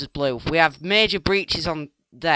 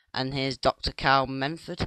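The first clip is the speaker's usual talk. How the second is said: normal talking voice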